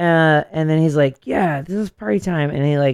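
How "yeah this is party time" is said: put-on drunk man voice, higher. Retelling a documentary scene: imitating drunk Alex Jones. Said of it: "Alex Jones is so drunk".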